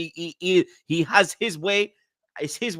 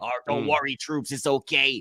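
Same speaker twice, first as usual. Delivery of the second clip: imitated American accent, lower pitch; 3 semitones lower than usual. Retelling a friend's reply during a watch along: imitating Zah's American accent. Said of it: "You doing the American accent".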